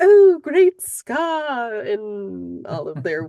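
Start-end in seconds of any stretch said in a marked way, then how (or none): 0.0-1.8 bad fawning, subservient hyena voice, higher and louder. Showing how the hyenas fawn over scar: horrible fawning hyena voice. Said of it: "That was a horrible, horrible voice".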